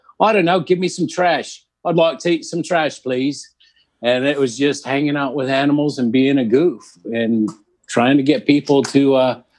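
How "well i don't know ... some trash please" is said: put-on goat voice with British accent. Giving the goats voices over FaceTime, in a British goat voice. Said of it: "the goats were British".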